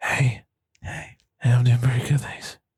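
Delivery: drowsy voice, sounding just woken up. Suggesting a return to an old bit, then doing the Tony Bottle half-whisper voice. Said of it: "go back to the Tony Bottle and whisper voice".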